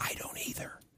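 soft, unvoiced whisper. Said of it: "you're gonna whisper back".

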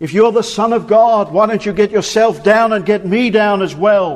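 crying out loudly. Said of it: "he cries out".

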